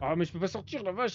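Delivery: getting annoyed, irritated tone. Stuck in a game and unable to get out, getting annoyed. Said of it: "je m'énerve là".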